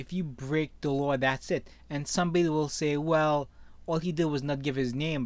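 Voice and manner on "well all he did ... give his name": normal talking voice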